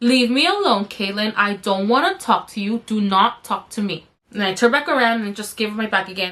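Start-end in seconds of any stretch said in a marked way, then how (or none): none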